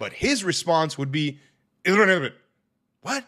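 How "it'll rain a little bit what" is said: extremely fast, rapid-fire, high and loud delivery. Imitating how he answered a simple question, extremely fast. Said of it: "he spoke incredibly fast".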